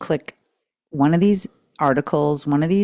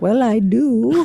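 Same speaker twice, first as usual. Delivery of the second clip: put-on odd, unusual accent delivered at a higher pitch; 7 semitones higher, 3 dB louder than usual. Asking about the other speaker's odd accent: imitating the other speaker's accent. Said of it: "What kind of accent was that?".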